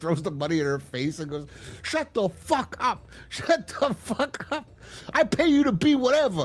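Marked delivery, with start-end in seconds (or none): 1.8-6.5 put-on angry outburst. Retelling a film scene where a character throws money, imitating angry yelling. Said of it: "he just gets pissed".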